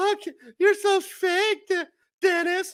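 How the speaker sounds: mock high-pitched squeal. Mocking an accuser's voice while relaying an online argument, in an imitation of a loud high-pitched voice. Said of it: "Voice getting all loud, high pitched".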